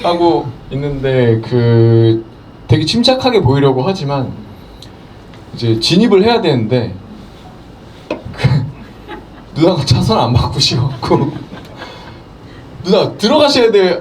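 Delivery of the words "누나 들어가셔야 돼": high-pitched, urgent, begging tone. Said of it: "이 정도 톤이 나와야 되는데".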